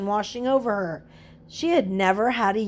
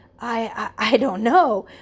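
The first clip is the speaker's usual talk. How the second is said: awkward, faltering fumbling, much slower; 3 dB louder than usual. Mary, asked by the bellboy how she became so courageous, answers: fumbling awkwardly. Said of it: "Mary fumbled awkwardly".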